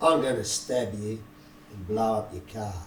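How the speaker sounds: very quiet, very low, deep mutter. Retelling a threat someone made: imitating someone muttering under breath. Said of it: "under his breath".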